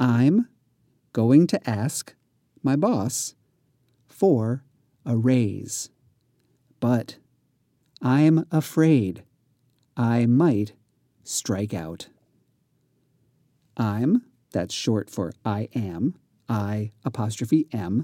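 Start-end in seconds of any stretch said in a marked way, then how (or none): 0.0-12.1 deliberate, unhurried, slow, halting, careful reading aloud. Reading practice sentence number one aloud again: slow, careful reading. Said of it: "Here is sentence number one more slowly".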